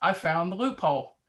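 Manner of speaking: ordinary delivery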